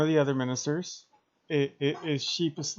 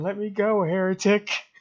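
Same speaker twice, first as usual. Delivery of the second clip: high, loud, full scream; 5 semitones higher, 5 dB louder than usual. Voicing a held guard who demands release: screaming. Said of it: "is essentially just screaming".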